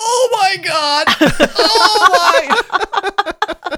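put-on yelling. Retelling how someone reacted after a bite of cupcake: imitating someone yelling. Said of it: "he takes a bite and he just yells".

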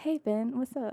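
whispering softly. Retrying a greeting on cue after calling the first one weird: whispering. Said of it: "Why did you whisper?".

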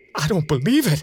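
frightened, terrified crying out. A terrified narrator, about to be caught in a field, cries out in fear. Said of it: "I cried".

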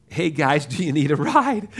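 put-on fun, friendly Southern accent. Retelling what a cab driver said after coming back, in a fun southern accent. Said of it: "he says in this real fun Southern accent".

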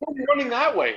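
disbelieving called-out voice.

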